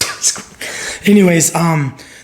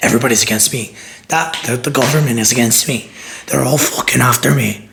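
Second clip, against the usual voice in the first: put-on old lady Irish brogue drifting toward a Scottish accent; 2 semitones lower than usual. Describing a woman who believed in a government conspiracy, old irish lady accent. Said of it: "That was a good accent".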